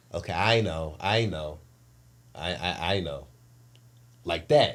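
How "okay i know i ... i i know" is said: put-on, soothing, placating, very slowly drawn-out tone. Retelling how mom answered during an argument, imitating mom placating. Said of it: "because she's not confrontational, says".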